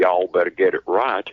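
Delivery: put-on, drawling Southern accent. Imitating Doc Holliday looking over his shoulder: Doc Holliday voice. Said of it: "It's almost like he's standing behind me, looking over my shoulder, going".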